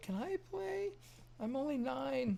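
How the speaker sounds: put-on very high, creaky, tiny little-kid voice. Recalling a kid's voice coming through among Minecraft players, in a tiny little kid voice. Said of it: "hear this little tiny voice come through".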